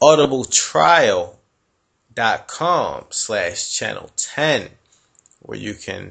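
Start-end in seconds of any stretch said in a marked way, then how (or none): 0.0-4.7 slower, careful pace. Repeating the web address for listeners who listen slowly, said more slowly. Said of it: "Let me just say that again more slowly".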